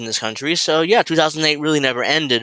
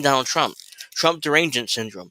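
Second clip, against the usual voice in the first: ordinary talk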